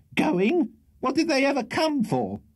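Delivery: shrill, very high, rattled-off scolding. A landlady leans over the banisters at her lodger's departing guests; shrill. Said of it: "replied the voice, with great shrillness and rapidity of utterance. ... screamed the shrill voice of Mrs".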